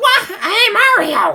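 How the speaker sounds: squeaky cartoon sidekick voice, very high, very loud, swooping. Describing how Toad always talks in the trailer, in a Toad voice. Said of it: "Toad always talks like this".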